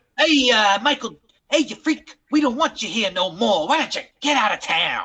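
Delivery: put-on tough-sounding New York accent throughout. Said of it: "[name]'s New Yorker accent is pretty good".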